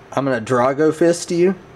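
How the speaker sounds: plain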